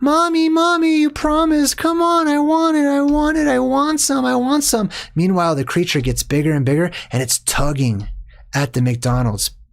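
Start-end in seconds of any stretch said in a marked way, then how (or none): 0.0-4.9 put-on very high-pitched little-kid voice, pleading and begging. Acting out a kid begging his mom: imitating a begging child. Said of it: "The kid's begging his mom".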